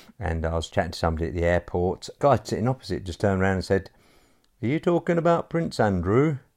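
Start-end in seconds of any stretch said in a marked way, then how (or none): 4.6-6.4 bad, put-on, very high Northern accent. Retelling what a guy at the airport asked: bad Northern accent. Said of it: "bad Northern accent".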